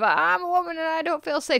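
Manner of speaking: small, high, trembling and wobbly voice. Retelling how a woman reacted when interrupted, in a mock wobbly little voice. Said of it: "her little wobbly voice of".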